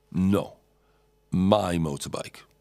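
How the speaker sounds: put-on menacing, threatening tone. Retelling a stranger claiming the motorbike: imitating a menacing claim. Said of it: "Making it very clear".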